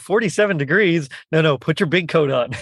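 ordinary talk, nothing marked

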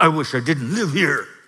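put-on mumble, hard to catch. Asking listeners to remember being a teen, acting it out: imitating a teen mumbling. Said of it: "just mumbling".

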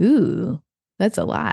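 put-on skeptical, unconvinced, slow, doubtful tone. Retelling how people reacted to big goals: imitating doubtful feedback. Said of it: "It sounded like this".

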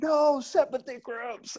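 put-on, mad, very high, furious scream. Recalling a man fed up with the girls' attitudes, retelling his scream. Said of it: "And he just screams".

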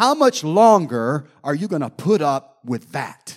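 scornful, disdainful, loud, disgusted reproach. Retelling words heard in an audible voice: imitating disdain and disgust. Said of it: "with disdain and disgust in his voice".

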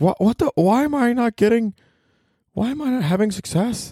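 high, whiny put-on voice, clueless-sounding.

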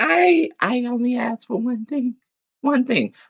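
high-pitched, whiny complaining.

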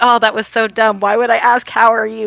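put-on embarrassed voice. Retelling Han's line after the prison block break-in: imitating Han's embarrassment. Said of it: "you can see how embarrassed he's just going".

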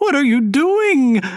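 loud, shrill, very high squeal. Mrs. Landing, watching Emma take shells from the cupboard, squealed. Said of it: "squealed Mrs. Landing".

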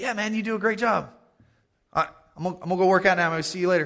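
high, hurried, offhand, dismissive fan voice.

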